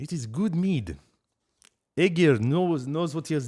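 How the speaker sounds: put-on slipping into Russian accent. Tasting mead while putting on a french accent: accidental russian accent. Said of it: "I went Russian for a second".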